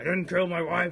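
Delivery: very loud, belted-out delivery. Retelling saying a line to oneself while a film loads: The Fugitive impression. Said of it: "that's a pretty good impression".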